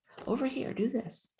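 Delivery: tiny, very high, soft voice. Describing how God speaks to her, voicing the guidance in a very small voice. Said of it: "it's a very small voice".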